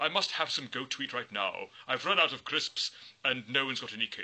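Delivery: plain reading voice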